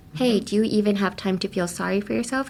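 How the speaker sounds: ordinary talk, nothing marked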